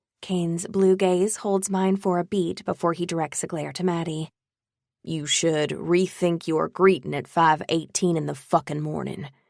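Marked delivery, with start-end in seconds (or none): 5.0-9.3 said with a growl. Narrator reading a male character's retort in a novel, growling. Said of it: "he growls".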